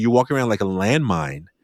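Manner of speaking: plain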